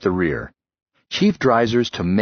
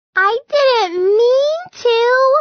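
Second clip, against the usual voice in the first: put-on very high, babyish little-girl voice; 4 dB louder than usual. Lummox, scolded by his friend, protests: baby girl voice. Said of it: "he protested in his baby girl voice".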